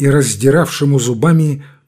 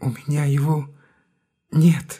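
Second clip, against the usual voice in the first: soft, hushed, barely-there half-whisper; 6 dB quieter than usual. Narrator reads a character answering a demand to hand back the lantern, half-whispering. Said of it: "прошептал Буланин".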